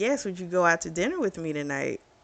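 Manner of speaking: ordinary delivery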